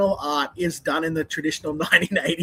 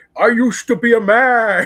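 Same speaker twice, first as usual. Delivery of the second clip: very loud, booming, drawn-out goofy monster voice; 5 semitones higher, 8 dB louder than usual.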